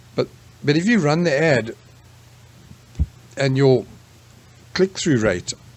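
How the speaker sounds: speaking with hiccups. Explaining ad spending and returns, speaking with hiccups. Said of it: "sorry, hiccups".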